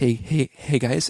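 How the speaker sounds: slow, unhurried, mild-mannered Canadian guy voice. Retelling how the producer stopped an argument: imitating Malcolm, soft-spoken Canadian. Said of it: "really kind of soft spoken Canadian guy".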